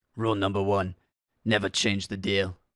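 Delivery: amateur attempt at a British accent. Speaker offers their own quote for a plaque, attempted British accent. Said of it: "I'm trying to do a British accent".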